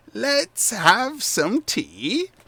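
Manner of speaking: very high voice like crunching leaves. A narrator voices a woman inviting the children to sit for tea; voice like crunching leaves. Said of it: "she says in a voice reminiscent of crunching leaves".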